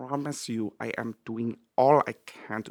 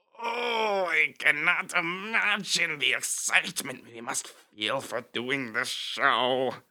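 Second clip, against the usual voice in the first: strained voice, pushed hard but reined in; 4 semitones higher than usual. Demonstrating someone yelling while holding it back: strained, held-back shout. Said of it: "it's this very strained".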